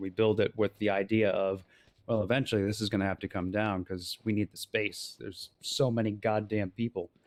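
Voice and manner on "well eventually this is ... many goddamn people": ordinary talk, nothing marked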